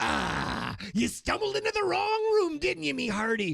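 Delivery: put-on pirate accent, very high, creaky and rough. Improv scene, a character greets someone who wandered in, in a pirate voice. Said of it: "are you like a, a pirate or something?".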